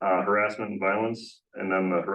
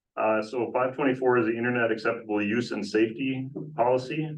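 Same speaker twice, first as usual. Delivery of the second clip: usual speaking voice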